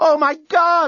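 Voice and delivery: piercing, very high, loud screamed cry. Narrator reads Lucy as gunfire rips into the starship, screaming. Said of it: "Screamed Lucy".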